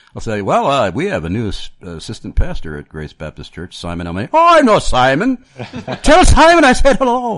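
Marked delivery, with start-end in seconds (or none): 4.3-7.3 bad put-on Irish accent, much higher, louder, slower. Retelling the reply of someone in ireland about a new assistant pastor, bad irish accent. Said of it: "how horrible of an accent was that I just did".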